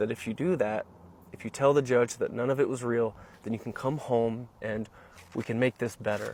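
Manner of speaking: normal talking voice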